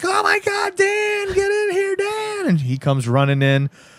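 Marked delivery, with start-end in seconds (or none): 0.0-2.5 very high, slow, drawn-out shriek. Retelling a scene, voicing her calling Dan in: imitating someone screaming. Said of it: "she starts screaming".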